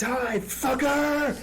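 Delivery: high, slow, loud roaring yell.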